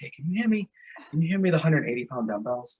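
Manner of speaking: tiny, shrunken, small and soft little voice. Retelling how a guy from California asked for the dumbbells, imitating a little voice. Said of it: "he had this like little voice".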